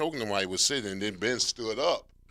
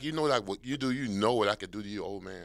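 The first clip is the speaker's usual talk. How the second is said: put-on taunting tone, laughing while talking. Retelling how someone being choked laughed at the coach: imitating someone laughing while talking. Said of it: "'cause he was laughing like".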